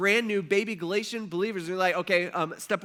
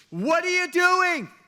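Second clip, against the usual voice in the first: indignant angry outburst, very high and loud; 11 semitones higher, 6 dB louder than usual. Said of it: "he's just like".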